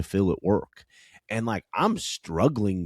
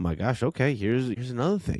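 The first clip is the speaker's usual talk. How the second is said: mock frustrated, exasperated, fed-up tone; 4 semitones higher than usual. Retelling own reply to her complaint: imitating own frustrated reply. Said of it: "And I'm frustrated".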